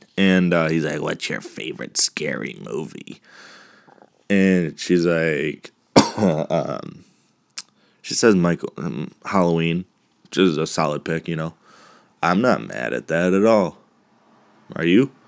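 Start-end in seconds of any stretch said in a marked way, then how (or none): 1.0-3.2 low, soft, kinda seductive, kinda creepy voice. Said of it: "kinda seductive but kinda creepy voice".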